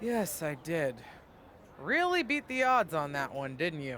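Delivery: unhappy, displeased, not-too-happy tone. Answering whether she saw the win to the semifinals: not too happy. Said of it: "You don't sound too happy about it".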